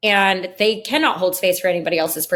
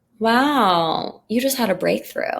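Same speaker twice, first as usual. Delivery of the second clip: put-on quiet, hushed voice; 2 semitones higher than usual. Retelling what the person on the phone said, imitating someone speaking quietly. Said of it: "they just got really quiet and they were like".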